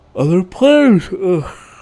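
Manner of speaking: loud words stretched out by a yawn. A gamer talking about their play; yawning. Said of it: "Sorry, I'm yawning".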